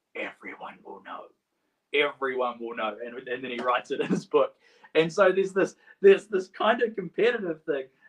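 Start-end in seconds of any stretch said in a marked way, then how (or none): 0.1-1.2 soft whisper under the breath, barely voiced. Retelling a meme in which John answers Peter at the tomb: whispering as John. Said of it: "under his breath, whispers".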